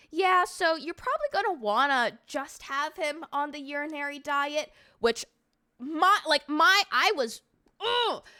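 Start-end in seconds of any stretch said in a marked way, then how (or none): 0.2-4.8 put-on utterly casual, unbothered, nonchalant, offhand tone. Retelling what the doctor said during the final conversation: imitating a doctor's nonchalant tone. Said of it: "He's speaking to me mad nonchalant".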